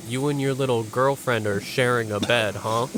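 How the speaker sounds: ordinary talk, nothing marked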